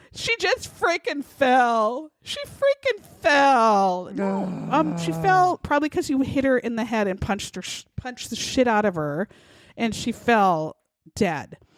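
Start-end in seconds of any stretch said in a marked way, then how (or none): 0.1-4.1 fake sobbing, falling, dragged out, swooping, slow. Retelling what a man said, imitating his fake crying. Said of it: "pretending to cry again".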